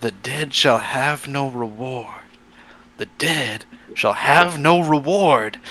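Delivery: slow half-whisper under the breath. A game narrator voices a man watching a body carried away, half-whispering to himself. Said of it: "whispering to himself".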